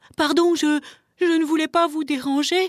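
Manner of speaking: high, panicked, flustered stammer, tripping over words. Velours, having tumbled onto a bear, apologizes to it with a panicked stammer. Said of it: "bredouilla Velours paniqué".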